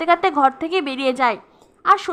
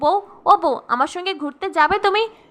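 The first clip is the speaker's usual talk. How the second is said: plain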